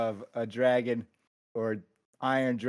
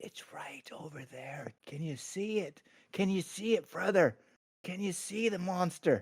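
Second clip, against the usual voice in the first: soft, high, hushed whisper, close in; 6 semitones higher, 6 dB quieter than usual. A character stops, looks at his brother, and points out the monster in a whisper. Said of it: "he looks at Tanis and he whispers".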